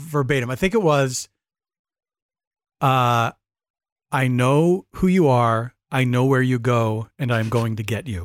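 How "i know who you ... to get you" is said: put-on calm voice, lower and slower. Retelling a line the speaker had an audience say in unison, imitating a calm voice. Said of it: "I had them say it in that like calm voice".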